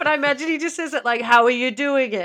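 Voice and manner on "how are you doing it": loud, flat, level robotic monotone. Imagining how a man says his catchphrase, the speaker uses a Terminator voice. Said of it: "Kind of like Terminator".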